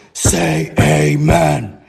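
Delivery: low, growling demonic voice with "amen" drawn out. Recalling a figure at the foot of the bed, the speaker retells its growling voice. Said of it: "in a growling like voice".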